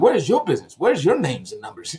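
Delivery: ordinary delivery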